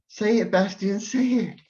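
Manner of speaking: very high-pitched, loud screaming. Recounting a movie scene where she begs Bastian to say it, retelling a scream. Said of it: "she screams and she's like".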